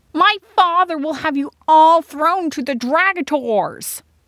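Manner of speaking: loud, shrill, very high scream. Narrating a story, Prince Grostir, captured by rebels, screams at them: screaming. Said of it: "screamed Grostir".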